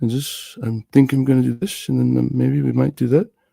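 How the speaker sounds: dry, emotionless drone. Mimicking how someone sounds in his video: imitating a dry monotone. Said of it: "just the same dry monotone".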